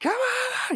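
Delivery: mock shrill screaming yell, very high. Retelling a movie scene, quoting Nicolas Cage: imitating Nicolas Cage screaming. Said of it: "he's screaming".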